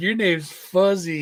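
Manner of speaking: put-on high baby talk voice, laughing. Telling Paul how Henry used to say it, imitating Henry's baby voice. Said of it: "put that baby voice on".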